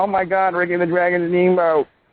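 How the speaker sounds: put-on high-pitched crying, like a child. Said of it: "those couple of babies are crying".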